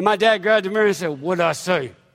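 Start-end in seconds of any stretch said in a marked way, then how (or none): 1.2-1.9 put-on gritted-teeth talk, lower pitched. Retelling a father's warning from the car: imitating dad talking through teeth, Clint Eastwood style. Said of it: "When my dad talked to his teeth".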